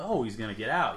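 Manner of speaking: plain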